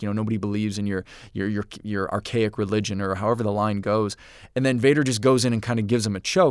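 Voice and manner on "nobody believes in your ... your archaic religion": normal talking voice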